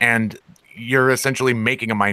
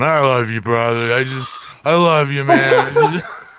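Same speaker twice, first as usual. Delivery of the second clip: slow, over-fond, tipsy voice, acted; 4 semitones higher, 3 dB louder than usual. Describing someone as the drunk with his arm around you, imitating an affectionate drunk. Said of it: "the drunk that's like got his arm around you".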